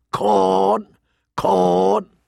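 raucous, rasping, rough, high raven-like squawk. Narrator reads the raven's words as Mormont hands John a letter, raucous raven voice. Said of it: "it muttered in a raucous voice".

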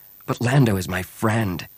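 ordinary delivery

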